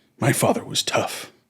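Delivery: whispered, put-on voice. Retelling Baldwin's story about his tough father, Baldwin impression. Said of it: "I should try to do his voice".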